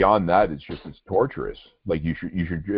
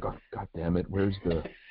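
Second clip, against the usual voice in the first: put-on muttering under breath, much quieter; 8 dB quieter than usual. Describing a man fumbling to stop a recording, imitating someone muttering under breath. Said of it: "going to himself under his breath".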